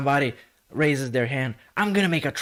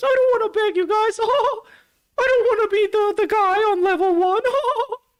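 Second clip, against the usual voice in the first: pitch going way up, squeaky and cartoonish; 3 dB louder than usual. Retelling a streamer's appeal to viewers on stream, in the Mickey Mouse voice. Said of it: "he puts on the Mickey Mouse voice".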